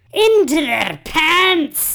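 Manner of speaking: put-on Scottish accent, loud and swooping, booming. Speaker delivers another person's line for them, Fat Bastard Scottish accent. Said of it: "that Scottish accent was better than my Russian accent".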